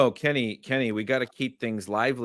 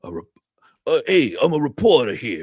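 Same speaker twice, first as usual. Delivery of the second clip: put-on loud, big New York accent; 3 semitones higher, 8 dB louder than usual. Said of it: "and he's like".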